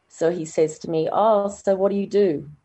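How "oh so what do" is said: put-on condescension, higher pitch, slower. Recounting a hospital visit, imitating the doctor's mock-patronising tone. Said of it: "In this tone that's already patronising".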